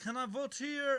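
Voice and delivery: put-on Eastern European accent, slow, careful and halting. Retelling what a voter at the polling place said: imitating an Eastern European accent. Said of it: "an Eastern European accent".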